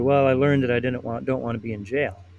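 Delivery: ordinary delivery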